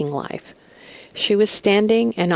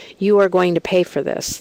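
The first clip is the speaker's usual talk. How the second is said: put-on very hostile voice. Retelling a dream where a man threatens with a bloody fist: imitating a very hostile voice. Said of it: "said to me in a very hostile voice".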